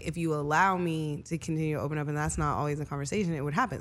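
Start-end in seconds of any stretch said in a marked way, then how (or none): none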